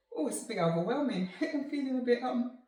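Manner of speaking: talking through tears. Telling the guys about speaking to her children, crying while talking. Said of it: "I don't usually cry".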